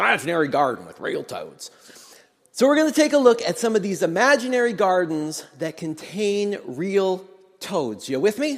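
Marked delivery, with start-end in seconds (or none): 0.0-1.7 put-on drawling Southern accent. Speaker quoting her New Testament professor's saying, imitating professor's southern drawl. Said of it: "you'd say it in a southern drawl too".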